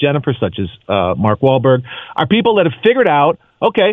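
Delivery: plain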